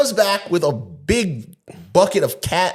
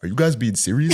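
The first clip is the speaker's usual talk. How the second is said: low, deep-voiced; 6 semitones lower than usual. Retelling a police stop, quoting a friend: deep voice imitating Toku. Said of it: "Toku's voice is deep. He's like".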